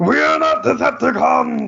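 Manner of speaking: very high, ragged, raw, rough, exasperated, fed-up shout. Retelling how a line in Siege was delivered: imitating an exasperated Optimus Prime shout. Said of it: "And he goes".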